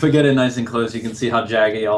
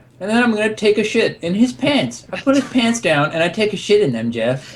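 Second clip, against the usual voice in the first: put-on high, swooping bratty kid voice; 10 semitones higher than usual. Speaker does a bit aimed at Jeff, in a Cartman voice. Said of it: "this an impression of me?".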